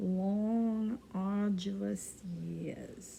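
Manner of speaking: slow, drawn-out New York accent.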